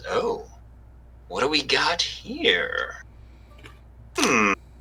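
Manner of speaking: high, slow, drawn-out imp creature voice. Voicing an imp who appears before the players: imp voice. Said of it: "an imp appears before you all, and he says".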